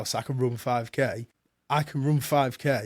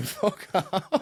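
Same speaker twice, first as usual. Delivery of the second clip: put-on screaming, pitched higher; 6 semitones higher than usual. Retelling a run, shouting at own brain: imitating own screaming.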